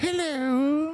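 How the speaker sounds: very high, drawn-out, affected posh hello. Imitating a parrot's greeting: imitating a parrot's very posh hello. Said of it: "she puts on a very posh".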